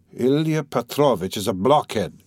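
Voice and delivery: plain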